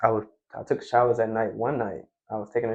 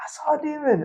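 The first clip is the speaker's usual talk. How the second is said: mock very high, fanatical, panicked shrieking scream. Retelling seeing a demon in the mirror at night: retelling frantic screaming. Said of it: "just screaming fanatically".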